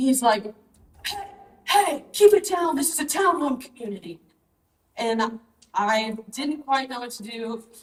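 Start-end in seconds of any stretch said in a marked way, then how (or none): 1.1-4.2 mock grown man's yell, pitched up. Retelling what an unknown man in the garage shouted, retelling a man yelling. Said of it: "he is yelling".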